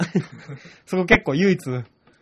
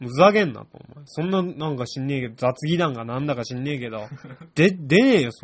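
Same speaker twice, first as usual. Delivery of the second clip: ordinary talk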